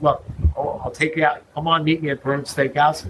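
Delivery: ordinary delivery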